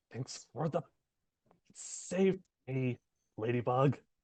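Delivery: hushed, quiet stage whisper. Playing Adrian, the speaker turns to Daryl and just half-whispers. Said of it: "Adrian will turn to Daryl and just whisper".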